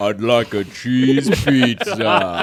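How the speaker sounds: put-on deep voice. Teasing Matthew by imitating him, deep-voiced Matthew impression. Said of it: "deep voice sounds like Home Alone 2".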